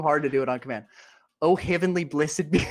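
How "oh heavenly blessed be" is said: clumsy, bad, put-on fake Australian accent. Attempting an accent on command while another speaker mocks it: bad australian accent. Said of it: "Your Australian accent is so bad".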